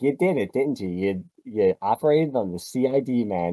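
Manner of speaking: plain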